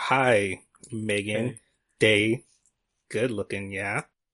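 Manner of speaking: ordinary delivery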